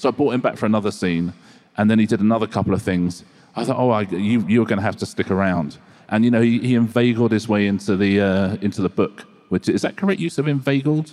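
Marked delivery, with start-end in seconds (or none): none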